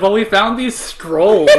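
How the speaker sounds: loud, high, mock unbothered nonchalance.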